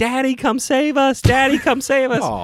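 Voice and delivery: put-on acted very high, panicked little child yelling. Recounting a beach trip, the speaker acts out the kid's cries, imitating a child yelling. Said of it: "and was yelling".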